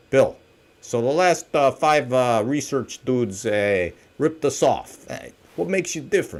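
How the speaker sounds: put-on heavy, laid-on Milwaukee accent. Role-playing a client asking what makes you different: put-on Milwaukee voice. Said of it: "It's my Milwaukee voice".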